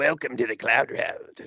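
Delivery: slow, breathy, whispered ghostly voice. Joking about someone waking after being choked out: put-on poltergeist voice. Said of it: "like, a poltergeist voice".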